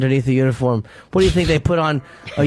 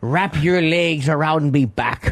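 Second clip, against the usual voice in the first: slow put-on pirate voice. Retelling what a man said during sex: retelling in a pirate voice. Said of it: "he said like in a pirate voice".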